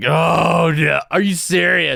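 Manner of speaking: acted, slow, high, drawn-out groan of annoyed disbelief. Retelling a flight delay, imitating groaning passengers. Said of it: "you could hear the groans".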